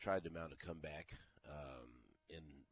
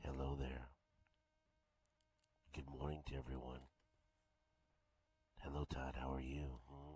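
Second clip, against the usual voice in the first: put-on, fake bedroom voice; 2 semitones lower than usual. Bringing back a bit to greet a co-host: put-on bedroom voice. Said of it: "the return of Bedroom Voice".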